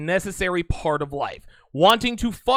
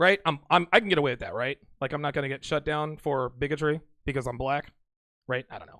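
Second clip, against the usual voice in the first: usual speaking voice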